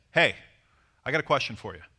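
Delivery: confident authoritative voice. Showing how to ask her a question without seeming weird: authoritative tone. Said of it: "Notice that I sound authoritative as I say it".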